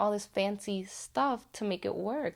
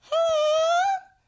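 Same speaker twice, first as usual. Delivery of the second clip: put-on very high, drawn-out girly "hello"; 7 dB louder than usual. Speaker doing a puppet show, giving the puppet's reply, girly Mary puppet voice. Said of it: "I'm going to use a girly voice".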